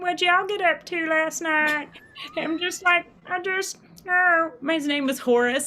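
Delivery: silly, dim-witted, dopey put-on voice. Retelling a character they played who wasn't in the scene, dumb Horace voice. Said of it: "that dumb voice".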